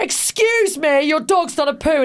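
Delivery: voice dripping with disgust. Retelling what someone said to them on a walk, in a mock-disgusted tone. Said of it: "in a disgusted tone".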